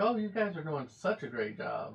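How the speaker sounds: sarcastic, insincere tone that means the opposite. Retelling what is said to the girls: imitating sarcastic praise. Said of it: "I have to use sarcasm".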